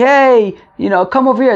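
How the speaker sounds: high, light voice, put-on calling out from afar. Retelling people calling across the park at night: imitating people yelling across a park. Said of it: "yelling as if".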